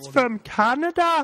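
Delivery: very high, blaring, really loud put-on voice, belted. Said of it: "that was my [name] voice".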